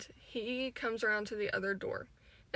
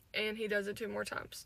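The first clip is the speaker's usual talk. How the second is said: usual speaking voice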